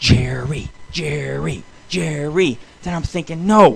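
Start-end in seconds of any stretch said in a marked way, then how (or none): 0.0-2.6 hushed half-whisper under the breath. Recalling watching a family fight, retelling a half-whisper to himself out the door. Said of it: "I'm whispering to myself out the door".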